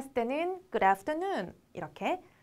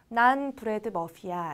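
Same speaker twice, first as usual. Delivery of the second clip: ordinary delivery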